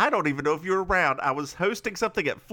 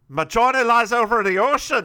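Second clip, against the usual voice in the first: fake, raised Scottish accent that slides into Irish; 5 semitones higher, 7 dB louder than usual. Opening an episode after getting the voice ready: put-on Scottish accent, sounding Irish. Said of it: "Why did you do that in an Irish accent? / It was supposed to be Scottish".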